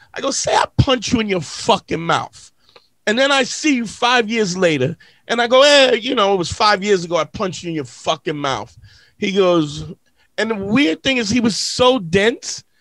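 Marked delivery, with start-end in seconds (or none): none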